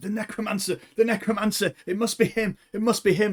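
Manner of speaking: high-pitched stage whisper delivered like shouting. A game narrator voices the fleeing bandits, in whispered shouts. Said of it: "you hear whispered shouts".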